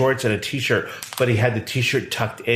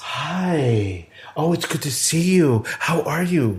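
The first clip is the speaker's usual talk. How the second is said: high, syrupy-sweet, sugary voice, long drawn-out "hi"; 5 semitones higher than usual.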